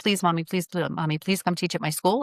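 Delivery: put-on pleading, begging child voice. Retelling how a daughter begged to have her teach at school: imitating a child begging. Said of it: "my daughter was begging me".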